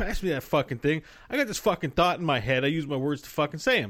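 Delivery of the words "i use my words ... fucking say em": ordinary talk, nothing marked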